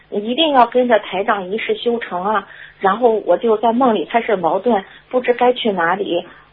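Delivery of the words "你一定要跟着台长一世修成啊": usual speaking voice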